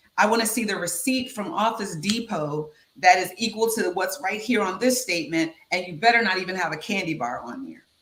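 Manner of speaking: ordinary delivery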